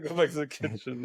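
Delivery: normal talking voice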